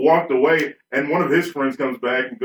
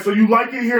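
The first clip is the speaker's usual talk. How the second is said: put-on angry voice, high and mad; 8 semitones higher than usual. Retelling what an angry veteran asked: imitating an angry man. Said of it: "one guy got real mad".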